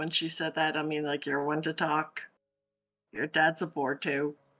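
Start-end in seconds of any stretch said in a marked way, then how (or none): 1.2-4.3 low mutter under breath, lower. Answering a character's boast in character: muttering under breath. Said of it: "I'm gonna kinda mutter under my breath".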